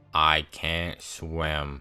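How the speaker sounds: low, dead, expressionless monotone, swim drawn out. Retelling fighting for your life in the water, quoting Ben: imitating Ben's monotone voice. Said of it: "he says in the most monotone voice".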